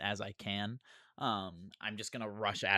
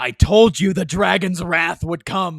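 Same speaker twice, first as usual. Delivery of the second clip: shrill, very high, very loud war-cry yell; 9 semitones higher, 20 dB louder than usual. A player voicing his character striking a foe repeatedly, yelling. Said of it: "he's just going to yell".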